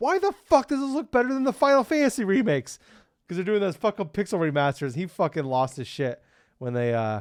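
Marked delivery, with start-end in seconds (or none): 0.0-2.8 very high, loud, freaked-out screaming outburst. Retelling how a fan reacted to an announcement: imitating someone screaming. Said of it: "screaming. He's like".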